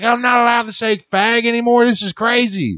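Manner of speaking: play-acted, very high, shrill, outraged ranting. Describing his grandpa yelling at the tv, imitating grandpa's indignant rant. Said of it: "Just going off".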